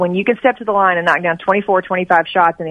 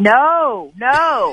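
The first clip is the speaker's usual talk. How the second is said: mild, contained called-out protest; 5 semitones higher than usual. Recalling watching the shot, re-enacting screaming at the TV. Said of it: "I screamed at the TV".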